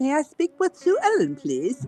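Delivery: put-on British accent. Retelling a man calling a woman on live air: put-on British accent. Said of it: "was talking in a British accent and said".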